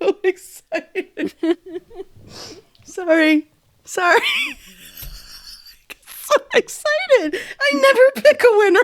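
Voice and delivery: talking through laughter. Reacting to hearing the series winner she picked, laughing while talking. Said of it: "She's laughing".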